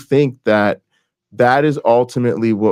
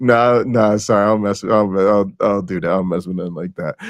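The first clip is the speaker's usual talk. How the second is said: put-on dismissive chuckle, pretend laughing; 2 semitones lower than usual. Pretending to turn down a church invitation: imitating a dismissive chuckle. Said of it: "You just kinda chuckle".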